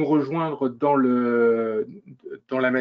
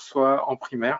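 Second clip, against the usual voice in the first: usual speaking voice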